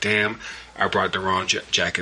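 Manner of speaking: normal talking voice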